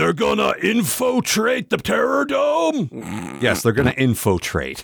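put-on gravelly drill sergeant voice. Doing a voice for Kilowog after the idea of Sergeant Slaughter: Sergeant Slaughter voice. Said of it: "exactly like Sergeant Slaughter".

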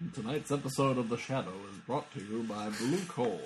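put-on vintage old-time radio broadcast announcer delivery. The speaker recalls a favorite bit from an old radio show, in an old radio voice. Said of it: "I try to do the old radio voice".

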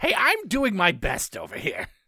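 villain character voice with swooping, swinging pitch. Playing a scene on camera, answering back in Otto Octavius voice. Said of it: "Is that what you sound like?".

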